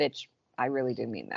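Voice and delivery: low, soft, sarcastic delivery. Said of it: "in a sarcastic".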